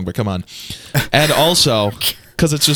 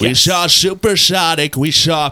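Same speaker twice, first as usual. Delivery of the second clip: drawn-out and high, with gulping inward breaths; 6 semitones higher than usual. Showing how to learn the inflection: Donald Trump impression with inward breathing. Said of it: "powerful inward breathing".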